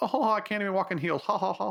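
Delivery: dorky, awkward voice. Mocking a movie character while describing the film, imitating dorky Barbara. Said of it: "she is like a dorky scientist character".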